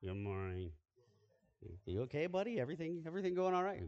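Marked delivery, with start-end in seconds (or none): 0.0-0.7 put-on grudging, low-energy, unenthusiastic teenage mumble. Imitating a teenage son's good morning: mumbled, unenthusiastic greeting. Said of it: "That sounded like a good morning I would get at home from my teenage sons".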